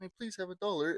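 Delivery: desperate, begging, pleading voice. Describing someone's skit, imitating a begging crackhead. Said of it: "what the crackhead thinks that they look like".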